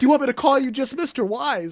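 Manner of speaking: put-on starstruck fan voice. Retelling how a character met Pennywise, imitating a starstruck fan. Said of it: "It was a little fangirlish".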